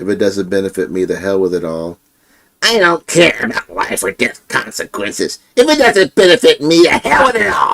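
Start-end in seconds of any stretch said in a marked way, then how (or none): 2.6-7.7 very high, swooping puppet voice. Saying a requested line in Eric puppet voice. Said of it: "Can you say in Eric puppet voice".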